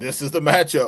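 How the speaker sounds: mock sarcastic tone. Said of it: "I sarcastically even said".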